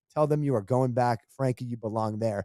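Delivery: ordinary talk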